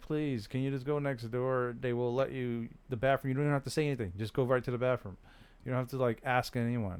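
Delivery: ordinary delivery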